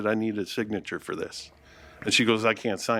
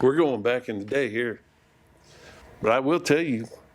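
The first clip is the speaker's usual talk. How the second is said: country honky tonk twang accent. Starting to answer a question about strange encounters as a mail carrier: honky tonk bar accent. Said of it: "I don't know where that accent came from".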